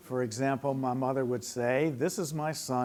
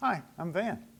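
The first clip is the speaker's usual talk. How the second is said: put-on higher-pitched voice of child about eight; 5 semitones higher than usual. Speaker demonstrating an exercise for the group: like an eight-year-old. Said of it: "as though you were about eight years old yourself".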